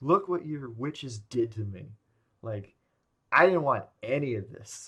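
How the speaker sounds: mock angry, fed-up, pissed-off outburst. Retelling a film scene where Paul is pissed at his mom: imitating Paul's angry outburst. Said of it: "Paul just straight up gets pissed at his mom".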